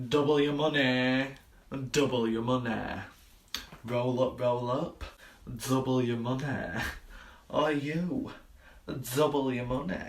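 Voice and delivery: ordinary delivery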